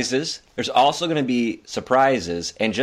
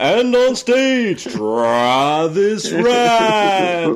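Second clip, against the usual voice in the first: put-on game show announcer voice, higher and louder; 8 semitones higher, 5 dB louder than usual. Doing an impression of a game show announcer introducing a co-host: Don Pardo announcer voice. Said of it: "Don Pardo".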